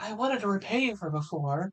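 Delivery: high, soft put-on voice. Voicing a character whose voice the speaker finds hard, high-pitched, quiet voice. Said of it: "she's high pitched and quiet".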